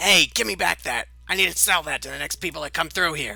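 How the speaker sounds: very loud, squeaking, snarling little-creature shout. One of many little voices shouts over the others: squeaking, snarling little voice. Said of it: "snarling, squeaking little voices".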